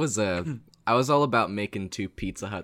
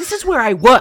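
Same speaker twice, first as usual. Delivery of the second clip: put-on angry voice, higher and louder; 14 dB louder than usual. Retelling a prank call, imitating the Walmart worker: imitating an angry worker. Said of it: "So angry".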